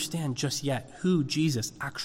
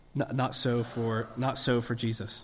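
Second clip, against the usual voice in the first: plain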